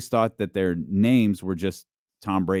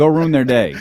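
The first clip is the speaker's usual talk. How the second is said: put-on smiling, awkward pep tone, higher; 5 semitones higher, 4 dB louder than usual. Imitating a pep talk said with a smile: imitating Tom Brady saying it with a smile. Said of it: "And he says it with, like, a smile".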